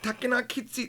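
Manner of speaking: put-on very high, cute little anime girl voice. Teaching a japanese phrase, imagining an anime little girl saying it: cute anime little-girl voice. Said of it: "imagine like an anime, a little girl doing this".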